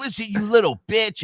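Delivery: very high, mock berating taunt. Retelling how a kid in an online game spoke to his son, mock-berating. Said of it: "this kid just like laced into him".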